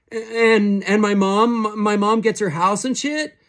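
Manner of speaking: very high voice trembling with nerves. A first-timer asks Richards over the comms, in a shaky, nervous voice. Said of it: "[name] was a first-timer. / looking green through his faceplate. / he said. / his voice shaky. / his voice sounding sweaty over the comms".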